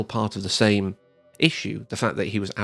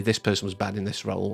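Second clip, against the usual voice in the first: normal talking voice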